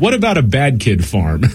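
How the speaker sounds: ordinary delivery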